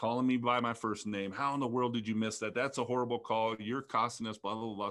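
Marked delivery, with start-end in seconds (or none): none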